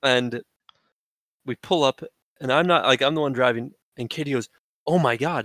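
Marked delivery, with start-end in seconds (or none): 4.9-5.5 sudden, really panicked outburst of alarm. Retelling a friend's reaction while driving home: imitating Katie panicking. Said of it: "in a really panicked way".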